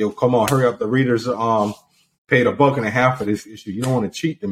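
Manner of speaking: ordinary talk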